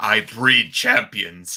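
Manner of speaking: loud British voice. Imitating Regal walking out as the team's mouthpiece: very British Regal voice. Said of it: "in a very, very nice and very British voice".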